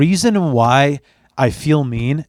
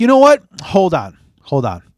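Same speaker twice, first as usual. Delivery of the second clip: deadpan, stoic sarcasm with swooping pitch; 4 semitones higher than usual. Retelling own words to a partner during sex: retelling own deadpan sarcasm. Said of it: "it's that deadpan, stoic".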